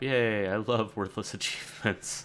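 sarcastic, mocking, not sincere. Playing a town-building game as an achievement pops up, sarcastic. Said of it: "I'm being sarcastic".

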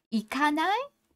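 ない said with pitch rising at the end. Japanese lesson, turning the negative form into an invitation; rising pitch at end of ない. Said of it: "ないand raise the intonation".

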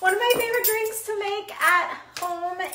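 breathless, high, nervous voice. Starting a video on making matcha at home, out of breath, nervous. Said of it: "I'm like suddenly out of breath".

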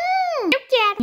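put-on high-pitched little boy voice.

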